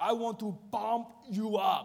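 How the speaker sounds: put-on loud, slow Austrian accent, pushed out. Retelling Peter's best attempt at an impression: Arnold Schwarzenegger impression. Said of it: "doing his best Arnold Schwarzenegger impressionation. Like".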